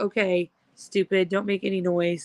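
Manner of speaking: ordinary talk, nothing marked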